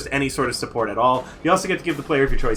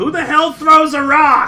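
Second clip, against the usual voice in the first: shrill, very high, loud yell; 13 semitones higher, 5 dB louder than usual. Game master voicing a character struck in the forehead by a rock, yelling. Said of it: "he yells".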